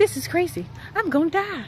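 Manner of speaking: high, breathless, winded huffing and puffing. Speaker climbing steep slopes on a mountain walk: out of breath, huffing and puffing. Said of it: "I'm huffing, I'm puffing, I can't breathe".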